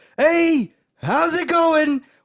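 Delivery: put-on cheerful old lady voice, high, loud, bright, sing-song.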